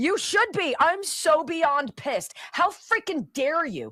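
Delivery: incensed, furious, very high-pitched scream. On camera, furious at the people being addressed: screaming in anger. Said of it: "I'm screaming and I'm getting very fussy".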